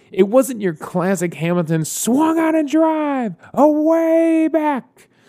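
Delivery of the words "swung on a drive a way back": high, drawn-out call, "way" stretched long. Retelling a home run call on a drive: Hamilton home run call impression. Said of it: "a much better Hamilton impression".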